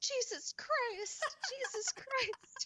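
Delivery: mock top-of-the-lungs yelling, very high and drawn-out. Retelling a child jumping up and down swearing: imitating a child yelling. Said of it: "yelling at the top of her lungs".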